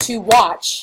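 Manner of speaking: extra stress on the word watch. Explaining iambic stress in a lesson, stress on watch. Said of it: "Watch is the one that has a stress".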